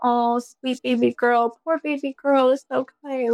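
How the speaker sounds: mock tender, soothing baby talk. Describing how the speaker comforts themself, mock soothing baby talk. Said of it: "speak to myself like I am a 2-year-old".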